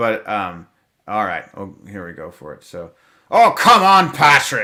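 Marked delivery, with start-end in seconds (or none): 3.3-4.6 loud, high-pitched put-on Irish accent. Performing a line people love to hear, in an Irish accent. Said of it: "in the Irish Irish accent".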